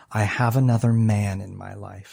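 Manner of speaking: put-on playful mock-serious tone. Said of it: "she did it in a funny way".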